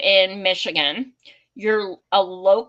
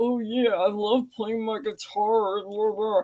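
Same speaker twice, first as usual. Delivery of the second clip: acted, derisive, mocking, taunting tone; 5 dB quieter than usual. Retelling how a guy mocked someone: imitating a mocking voice. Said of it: "mocking him".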